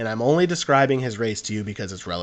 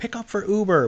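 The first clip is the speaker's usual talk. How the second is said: very broken English, pitched very high; 11 semitones higher than usual. Retelling how a driver announced his uber pickup, imitating broken english. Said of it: "but like very broken English".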